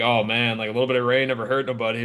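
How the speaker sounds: put-on sarcastic tone. Imitating another speaker's sarcastic remark about fishing in rain: imitating someone being sarcastic. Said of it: "or you being sarcastic".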